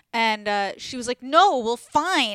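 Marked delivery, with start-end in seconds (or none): 1.2-2.3 put-on very loud, shrill, angry screaming. Retelling a screaming fight in Amsterdam, the speaker quotes her, imitating an angry retort. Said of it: "screaming fight".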